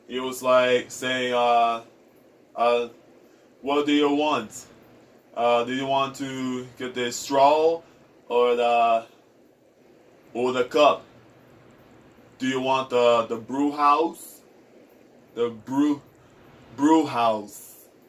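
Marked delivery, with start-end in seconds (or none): 3.6-17.7 put-on Brazilian accent, halting English. Retelling how someone with a brazilian accent spoke, imitating a brazilian accent. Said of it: "a Brazilian accent".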